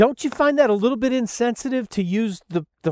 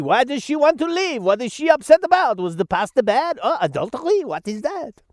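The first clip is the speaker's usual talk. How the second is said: bad fake Italian accent slipping into French accent; 3 semitones higher than usual. Imitating a judge questioning a woman in court, in a bad Italian accent. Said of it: "did I slip into a French accent there? I was trying to do an Italian accent".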